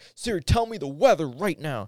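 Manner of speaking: very loud, high, aggressive barked delivery. Acting out asking a phone assistant in a bad mood: imitating an aggressive demand. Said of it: "asked Siri in an aggressive way".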